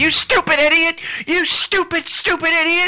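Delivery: shrill, loud, very high fake-furious yell. Imagining walking up to someone while pissed at them: pretending to be furious. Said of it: "because I'm so pissed at you".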